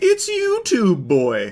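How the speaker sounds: high, swooping cartoon owl voice, sing-song cadence. Quoting a police officer from a video, sounding like the Tootsie Pop owl. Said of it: "sounding like the owl from the How Many Licks".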